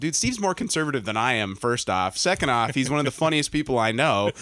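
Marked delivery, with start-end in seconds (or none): none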